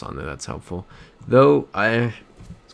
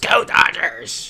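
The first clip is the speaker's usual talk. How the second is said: furious, loud, angry shout; 3 dB louder than usual. Retelling a woman who flings the bar door open: imitating a loud angry yell. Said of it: "really loud and angrily".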